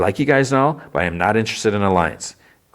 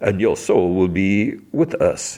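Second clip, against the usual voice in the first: slow, drawn-out, put-on British accent. Retelling a character's taunts, this one in a British voice. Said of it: "And then a British voice".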